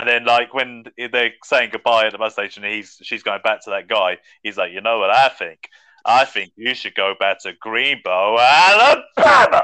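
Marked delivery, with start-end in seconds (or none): 4.7-9.6 put-on slow Southern movie-character voice, louder. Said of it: "a Forrest Gump voice".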